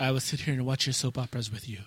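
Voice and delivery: put-on Spanish accent. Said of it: "With the Spanish accent".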